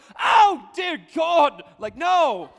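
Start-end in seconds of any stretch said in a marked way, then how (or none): 0.2-1.7 very loud, high, fake English accent. Mocking how some people pray: put-on English accent. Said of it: "start talking with an English accent".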